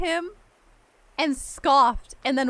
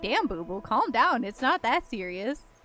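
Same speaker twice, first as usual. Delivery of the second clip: ordinary talk, nothing marked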